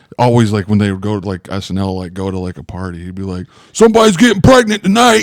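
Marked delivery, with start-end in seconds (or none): 3.7-5.3 loud, high-pitched yelling. Imitating Tracy Morgan at a party: imitating Tracy Morgan yelling. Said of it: "he would just be yelling like that".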